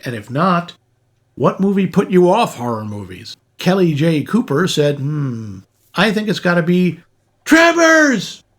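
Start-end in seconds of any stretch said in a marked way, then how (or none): 5.9-8.3 put-on very high-pitched, all-caps emphatic burst. Reading out a listener's poll answer written in all caps: imitating an all-caps message. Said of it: "I have to say it like that 'cause she wrote it in all caps".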